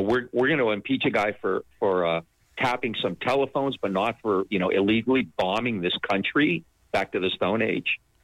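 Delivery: ordinary talk, nothing marked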